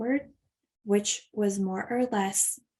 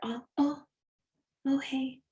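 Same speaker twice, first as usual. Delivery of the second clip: put-on drowsy voice, higher; 4 semitones higher than usual. Retelling pretending to wake when someone came home: imitating a fake sleepy voice. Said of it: "I'll pretend I'm sleepy when you get here".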